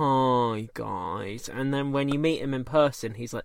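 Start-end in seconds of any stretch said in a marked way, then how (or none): 0.0-1.5 long, drawn-out, stretched hi. Imitating the boss introducing a training course: Tim Martin impression. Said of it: "introduces every single training course that he's involved in with".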